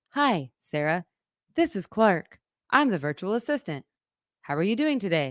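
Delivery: slightly robotic, near-human assistant voice. Retelling a call to LG's virtual assistant: Clark virtual assistant voice. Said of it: "it sounds like a human, except for... it's a little bit robotic".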